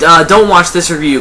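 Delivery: ordinary talk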